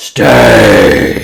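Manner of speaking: very low, very loud, eerie, booming disembodied roar. Voicing a fiend ordering the party to stay: disembodied yell. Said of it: "yells out with a disembodied voice".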